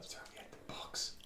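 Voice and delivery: whispered, barely audible, very quiet. Whispering to the character holding him in a grip: whispering. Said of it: "I whisper".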